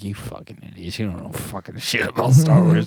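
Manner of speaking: put-on mocking rant full of scorn. Retelling thoughts while overhearing two guys in a sauna: retelling inner mocking rant. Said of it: "giggling to myself, like".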